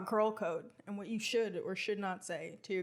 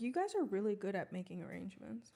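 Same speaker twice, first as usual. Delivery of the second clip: usual speaking voice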